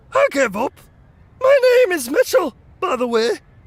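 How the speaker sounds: surprisingly high-pitched troll voice. Narrator reading a troll giving up after a fight, in a surprisingly high voice. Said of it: "he said in a surprisingly high voice".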